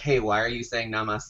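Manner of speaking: plain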